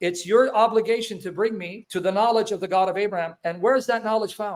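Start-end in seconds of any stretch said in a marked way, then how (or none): none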